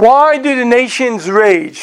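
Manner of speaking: slow, high-pitched reading voice. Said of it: "I'll just try to read it slowly".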